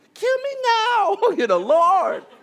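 put-on very high, loud, drawn-out five-year-old voice. Reading Jonah's complaint to the Lord, as suggested: five-year-old voice. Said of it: "Put it in like a five-year-old voice".

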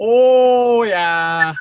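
put-on very high voice with full Minnesota accent. Describing how their mom talks around her sisters, thick Minnesotan accent. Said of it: "full Minnesota".

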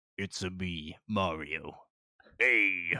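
deepened plain voice, loud and very slow. Joking about the Mario film: Chris Pratt voice as Mario. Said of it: "It's just him again".

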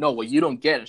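put-on angry voice, almost crying. Speaker retelling a woman freaking out while waiting for an event, mimicking angry near-tears retort. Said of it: "She had like almost started crying, but out of anger".

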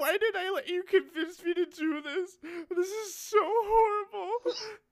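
very high, loud sobbing wail through tears. Re-enacting crying into a toilet while upset: imitating own crying. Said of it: "while I'm crying".

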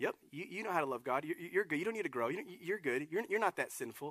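soft little tempting voice. Acting out the voice the enemy wants you to have, in a little Ned Flanders voice. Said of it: "That little Ned Flanders voice".

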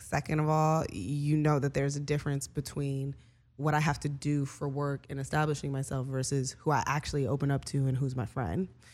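normal talking voice

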